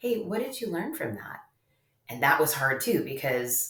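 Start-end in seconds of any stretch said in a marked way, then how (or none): 0.0-1.4 really calm, soft, steady, unruffled voice. Retelling how the speaker's husband turned to their son, imitating his calm voice. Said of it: "in a really calm voice".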